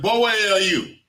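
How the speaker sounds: put-on shrill, called-out, elderly-sounding voice. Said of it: "y'all ain't never heard an older person".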